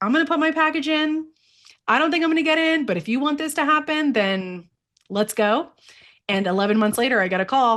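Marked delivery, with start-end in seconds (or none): 0.0-5.7 play-acted heavy sarcasm, dripping, pitched up. Retelling a sarcastic remark made to God about applying. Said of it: "I very sarcastically to God was like".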